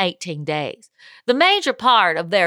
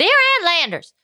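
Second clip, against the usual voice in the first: put-on, pitched-up Texan accent; 8 semitones higher than usual. Reading a letter aloud, switching it up: texas accent. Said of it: "I'll do it in a Texas accent".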